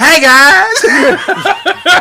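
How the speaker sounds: shrill, booming, very high, loud, swooping sing-song. Imitating a friend who poses for pictures: imitating Kevin. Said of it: "He's like".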